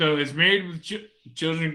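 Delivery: stumbling speech broken by hiccups. Asking a question mid-conversation while hiccuping. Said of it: "I got the hiccups".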